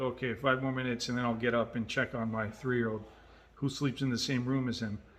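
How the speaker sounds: usual speaking voice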